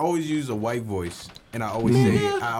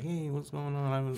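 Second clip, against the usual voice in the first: soft, put-on casual voice; 3 semitones higher, 9 dB quieter than usual.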